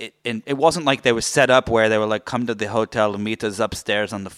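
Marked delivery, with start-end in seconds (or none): 2.3-4.4 really bad, put-on Russian accent. Imagining how russian officials set up a meeting: bad russian accent. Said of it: "that was a really bad Russian accent".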